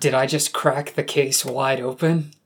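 ordinary talk, nothing marked

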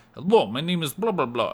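put-on over-the-top Russian accent. Recalling a desert elf character you once played: thick stereotypical russian accent. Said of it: "very thick kind of very stereotypical Russian accent".

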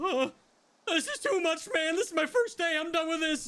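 trembling voice pitched very high. Retelling a scene, the speaker voices someone heard in the distance, mock-shaky voice. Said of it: "you hear that shaky voice go".

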